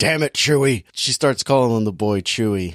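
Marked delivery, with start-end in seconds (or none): 0.0-0.8 mock elderly man's voice. Retelling a movie character's line in a Harrison Ford voice. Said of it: "her voice turn into, like, an old man".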